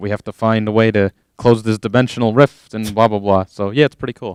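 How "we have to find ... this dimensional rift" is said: ordinary delivery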